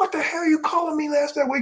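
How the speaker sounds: play-acted, shrill, very high screaming. Telling a story, acting out one man's outburst at another; imitating someone yelling. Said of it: "he's just yelling at him, screaming at him".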